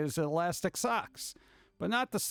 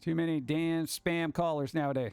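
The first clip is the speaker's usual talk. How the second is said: ordinary talk, nothing marked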